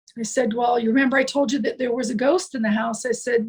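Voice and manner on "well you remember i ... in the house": ordinary talk, nothing marked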